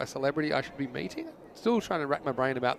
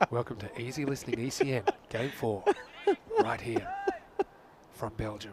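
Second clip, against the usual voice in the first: creepy, sing-song put-on easy-listening radio host voice; 3 semitones lower, 4 dB quieter than usual. A commentator announces talking about love in a special voice: easy-listening presenter voice. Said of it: "we talk in this voice".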